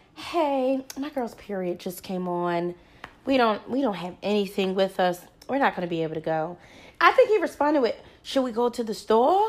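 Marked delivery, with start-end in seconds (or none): 8.3-9.5 imitated Guatemalan accent. Retelling how a man responded to the excuse for not going, Guatemalan accent. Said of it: "Don't do the accent".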